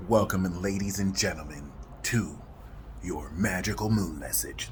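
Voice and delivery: grand, deep, hushed epic movie-trailer announcer voice. Host welcoming listeners to the magical moon message, epic movie trailer voice. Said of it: "in my epic trailer voice".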